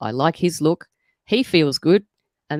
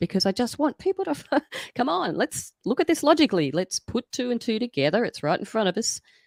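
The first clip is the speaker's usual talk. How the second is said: slightly desperate urgent voice with raised pitch; 7 semitones higher, 4 dB quieter than usual. In a conversation, urging people to think it through, a little desperate. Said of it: "you can probably hear a little bit of desperation in my voice".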